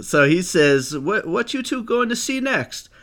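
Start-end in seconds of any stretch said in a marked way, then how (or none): 1.0-2.8 very high-pitched, eccentric put-on voice, pushed way up. Retelling how a stranger approached them in a theater lobby: Tommy Wiseau impression. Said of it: "that's my Tommy Wiseau impression".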